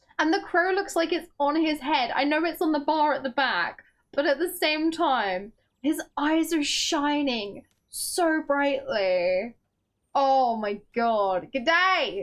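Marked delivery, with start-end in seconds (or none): 11.5-12.2 bad fake Australian accent, higher. Launching into a greeting in a bad Australian accent. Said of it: "Are you getting ready for a bad Australian accent?".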